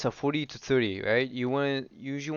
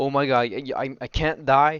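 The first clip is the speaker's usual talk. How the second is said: mock panic, much slower; 6 dB louder than usual. Reviewing a player's fight, the speaker imitates that player's panic. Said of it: "You're just stressing like".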